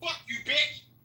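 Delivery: very high furious yell. Cursing repeatedly at another speaker who keeps saying watch your mouth: angry. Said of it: "Why are you so angry?".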